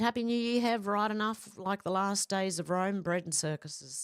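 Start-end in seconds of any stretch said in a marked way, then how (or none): none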